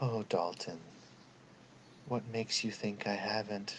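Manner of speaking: barely-there, faint, very soft whisper. Voicing a voice heard again after a long pause: faint whisper. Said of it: "but in a faint whisper".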